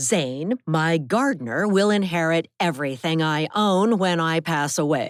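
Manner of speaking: crisp, sharp, cutting voice. Reading a story, grandmother announcing who inherits her estate: crisp, sharp voice. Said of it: "voice was crisp and sharp as a knife".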